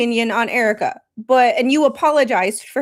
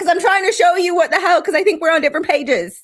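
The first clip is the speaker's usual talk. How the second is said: put-on argumentative tone, pitched up; 6 semitones higher than usual. Retelling own side of an argument with Spawn: retelling own argument. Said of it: "you should have seen Spawn and I talk to each other".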